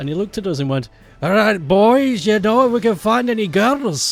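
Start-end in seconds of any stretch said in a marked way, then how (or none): 1.2-4.1 put-on very loud, boozy, drunk Irish accent. Retelling what a drunk teacher said to the boys, imitating an irish accent. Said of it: "but he had an Irish accent".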